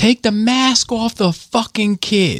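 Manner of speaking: very high, put-on mock yelling. Retelling a stranger's words at night, imitating a man yelling. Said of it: "this dude yelling at my wife".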